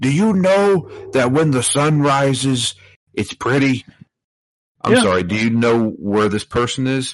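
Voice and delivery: slow, stilted robot voice. Mocking a game's conversations: imitating robotic game dialogue. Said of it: "this is like robots talking".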